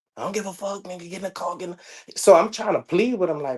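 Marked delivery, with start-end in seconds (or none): 0.2-2.2 very quiet, hushed, rapid, menacing gangster-style tone. Retelling what an aggressive man told him, imitating aggressive threats. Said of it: "He's super aggressive".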